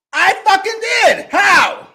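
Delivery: heated, argumentative, loud, high-pitched yell. In a heated argument, answering someone who demands an explanation, yelling. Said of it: "Why are you yelling?".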